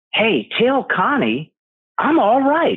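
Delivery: very excited, high-pitched delivery.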